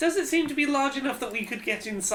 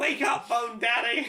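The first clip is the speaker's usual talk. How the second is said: loud shouting, yelling; 2 semitones higher than usual. Player shouting at the sleeping Father of Bones during the game, shouting. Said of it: "not expect someone to occasionally shout".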